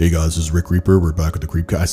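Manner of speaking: low, flat, toneless robotic monotone. Mimicking how others mock his podcast intro: flat, monotone, robotic. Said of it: "so monotone and robotic".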